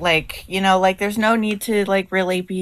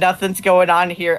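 normal talking voice

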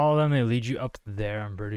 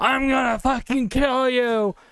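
high mock scream in a brutish voice. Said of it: "you're screaming, you're shouting".

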